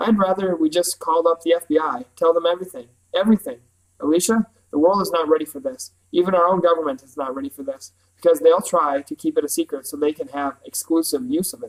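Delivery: ordinary delivery, nothing marked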